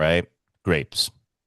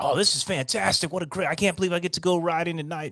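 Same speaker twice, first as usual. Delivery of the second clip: put-on, very high, thrilled, excited gushing chatter; 13 semitones higher than usual. Retelling a bike ride to the vet, voicing Poo Poo as excited. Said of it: "he's so excited".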